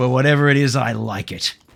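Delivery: flat, utterly serious, deadpan delivery. Retelling a scene where a character answers Robin, mock deadpan delivery. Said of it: "he just cuts to him deadpan going".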